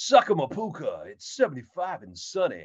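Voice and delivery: smug, booming, swooping announcer voice. Speaker mocks the monster truck announcers he nicknamed: imitating a self-loving announcer. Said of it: "more in love with hearing the sound of their voices".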